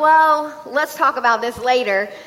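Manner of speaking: ordinary delivery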